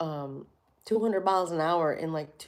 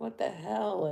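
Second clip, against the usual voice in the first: put-on freaked-out voice, quieter; 3 semitones higher, 6 dB quieter than usual. Retelling how someone reacted during a ride, imitating a freaked-out reaction. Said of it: "So it freaked him out".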